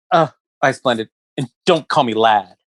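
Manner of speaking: put-on rude, nasty snapping tone. Retelling a customer's reply to being called Lad: imitating a rude reply. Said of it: "he said it, like, really shitty".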